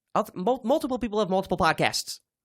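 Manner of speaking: rapid, tripping over words. Arguing with a co-host about having other podcasts, saying it very fast. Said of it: "I said that really fast".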